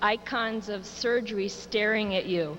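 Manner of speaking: ordinary talk, nothing marked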